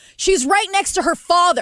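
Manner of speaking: mock angry yelling. Retelling an argument with him in front of his family, retelling yelling back. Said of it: "So now I'm yelling back".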